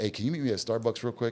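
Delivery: ordinary delivery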